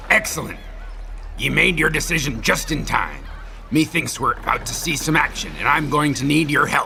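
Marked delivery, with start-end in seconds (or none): none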